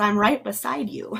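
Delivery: put-on little girl voice. Retelling a voice that answered the question asked, in a little girl's voice. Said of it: "this little girl's voice that says".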